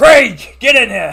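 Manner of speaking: very loud, high-pitched regal bellow at full volume. Retelling a character screaming for Craig to come in, King Robert voice. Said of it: "Like it's a very King Robert-y voice".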